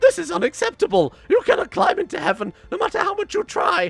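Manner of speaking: very high, shrill, squeaky, pigeon-like screech. Narrating the game, the storyteller voices an upset figure at the court, screaming. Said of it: "raises his voice and screams".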